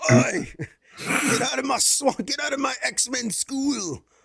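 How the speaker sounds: very high-pitched, bad Scottish accent. Imagining Mike Myers playing Professor X, doing Shrek's Scottish accent. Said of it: "the Scottish accent".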